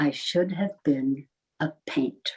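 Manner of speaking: put-on very quiet voice. Retelling a mother's answer to a journalist: imitating a very quiet voice. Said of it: "in a very quiet voice".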